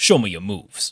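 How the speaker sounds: loud, booming fighting-game villain voice. Recalling a line of Ganondorf's from Melee: Ganondorf voice. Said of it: "He's he's the one in Melee that goes".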